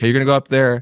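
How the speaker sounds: ordinary delivery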